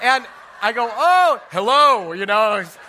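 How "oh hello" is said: loud, formal, official-sounding pastor voice. Retelling answering a man who greeted him from his car window, official pastor voice. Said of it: "official pastor voice".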